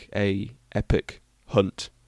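deliberate, slow, soft, each word spaced out. Speaker reading an unused title for a special aloud, said slowly. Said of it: "I've said that slowly for a reason".

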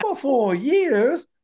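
put-on very high-pitched stage-kid reading, pitched way up. Imitating a girl's line reading that sounded like a kid from Annie. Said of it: "I felt like it was gonna go into Annie".

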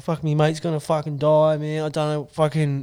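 bawling, sobbing the words out through tears. Retelling a panicked phone call about a dying friend, imitating crying. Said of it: "I was bawling my eyes out".

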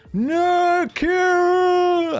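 very high, loud, stretched-out slow-motion yell. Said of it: "And in slow motion".

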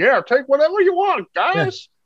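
very high-pitched put-on hillbilly voice. Describing a scene at a disused garage, quoting some hillbilly in a hillbilly voice. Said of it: "some hillbilly goes".

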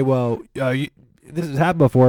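normal talking voice

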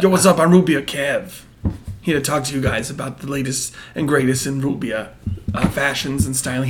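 loud, belted, bad put-on Brooklyn accent.

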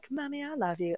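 high, adoring, overjoyed dog voice. Describing a dog smiling up at its owner: voicing a happy dog. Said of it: "looking up at you like".

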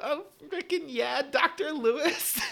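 very loud, very high, slow, shrieking exaggerated sexual moan. Speaker acting out what they would yell in unison, mock porn-star moaning. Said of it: "start screaming, making porn noises".

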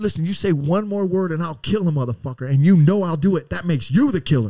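mock, sudden, blurted-out delivery. Recounting a tense moment on a train, retelling a blurted-out threat. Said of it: "I just blurted out".

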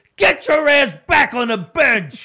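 very high-pitched, loud yell. Retelling someone yelling at Alex on air: retelling Ian's yell. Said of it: "he's yelling at Alex".

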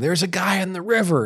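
shrill, very high-pitched shout. Retelling a river rescue, quoting the dad's call to a boat: imitating someone yelling. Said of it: "my dad said he was yelling".

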